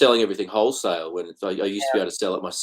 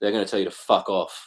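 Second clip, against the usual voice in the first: ordinary talk, nothing marked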